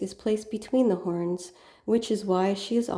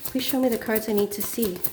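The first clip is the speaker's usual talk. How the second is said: ordinary talk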